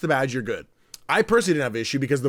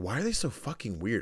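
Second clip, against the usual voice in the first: very soft, low, hushed half-whispered aside; 4 semitones lower, 11 dB quieter than usual. Retelling what they said to a companion on the escalator, retelling a half-whisper. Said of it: "and then I whispered something to nurse".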